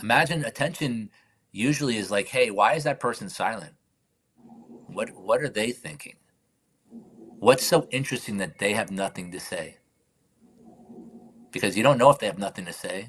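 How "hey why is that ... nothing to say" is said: plain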